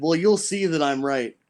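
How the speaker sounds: ordinary delivery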